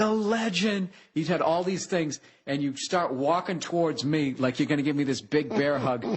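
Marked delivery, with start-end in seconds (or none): 0.0-0.9 high, announcing shout called out across a distance. Retelling a greeting shouted across a parking lot: imitating someone shouting. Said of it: "He's shouting across the parking lot".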